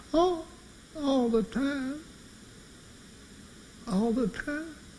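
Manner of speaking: mock trembling voice, very high, very slow. Retelling a friend's answer on the phone: imitating a quivering voice. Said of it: "a quivering voice came over the phone".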